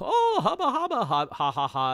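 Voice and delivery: high, swooping, excited creature voice. Speaker recapping the story voices the creature meeting the main characters: Marsupilami's excited voice. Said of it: "I guess that's his excited voice".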